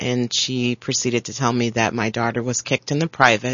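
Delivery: ordinary talk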